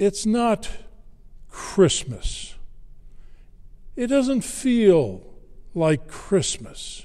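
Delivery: nearly on a sigh, slightly high voice. Retelling what she said while slouching on the couch: retelling a sigh. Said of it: "she said almost in a sigh".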